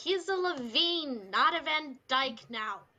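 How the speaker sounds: shouting in character. Yelling in character over the chatter to defend another character: yelling over the chatter. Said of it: "I'm going to yell".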